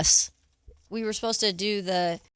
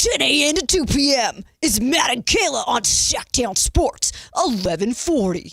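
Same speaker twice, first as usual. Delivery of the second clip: put-on commercial announcer voice; 3 semitones higher, 4 dB louder than usual. Retaking a sports radio station promo read, MTV commercial voice. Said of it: "sounds like you're doing like an M T V commercial".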